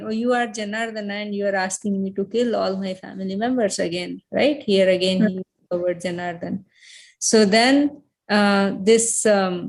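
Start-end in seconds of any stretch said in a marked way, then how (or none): none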